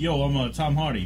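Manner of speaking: put-on Brooklyn accent. Viewer describing a film, doing a Tom Hardy Brooklyn accent. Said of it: "Like Brooklyn type".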